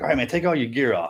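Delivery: ordinary talk, nothing marked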